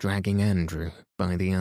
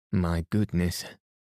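ordinary delivery

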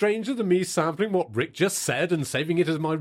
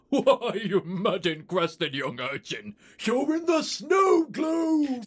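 put-on drunk old man voice, pitched higher; 5 semitones higher than usual. Voicing Santa answering the boy after a tinkle: drunk Santa voice. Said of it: "visibly drunk Santa".

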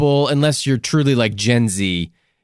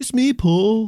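put-on Liverpudlian voice, higher pitched; 9 semitones higher than usual. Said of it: "How's my [name]?".

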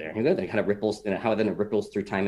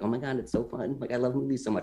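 put-on giddy, gushing excited teenage boy voice; 4 semitones higher, 4 dB quieter than usual. Voicing the fifteen-year-old boy still inside, imitating excited fifteen-year-old self. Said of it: "I have still that fifteen-year-old boy being like".

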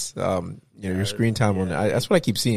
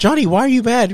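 very high, very loud, over-acted earnest tone; 14 semitones higher, 8 dB louder than usual. Retelling a filmed argument, mimicking a woman acting badly: imitating over-acted fake sincerity. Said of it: "she's like the worst actor trying to be real".

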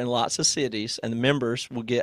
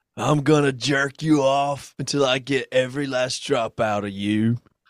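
exaggerated dumb-sounding Southern accent, spoken slowly. Reading a viewer's line as Nicolas Cage in Con Air: Nicolas Cage voice. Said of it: "it's a dumb Southern accent, Nicolas Cage".

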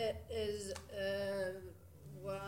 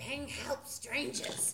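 hushed aside, muttered under the breath; 5 semitones higher than usual. Playing a game character, addressing Ping: muttered under breath. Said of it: "I mutter under my breath".

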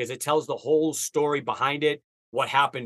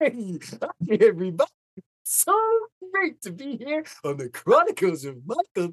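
put-on dinosaur character voice, much higher; 9 semitones higher than usual. After asking if the others want to hear it, a speaker performs a Barney voice. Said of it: "I can do Barney to a T".

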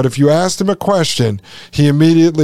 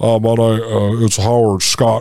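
put-on deep, slow radio voice, pitched lower; 5 semitones lower than usual. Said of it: "He talks like this".

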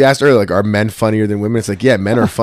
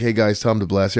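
mellow, calmed-down put-on voice, quieter; 4 dB quieter than usual. Imitating someone who calmed down at forty: imitating calm Tom. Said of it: "He's Mister Peaceful now?".

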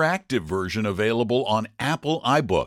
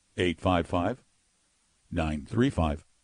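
dramatic pauses, much lower and quieter; 6 semitones lower, 5 dB quieter than usual. Asked to repeat the call-in number without interruption: with dramatic pauses. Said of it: "These are dramatic pauses".

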